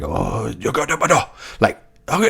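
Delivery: Japanese-style game character sounding voice. Retelling imitating the Japanese-speaking characters in a video game: imitating Japanese game dialogue sounds. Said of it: "I'm just trying to sound like those guys".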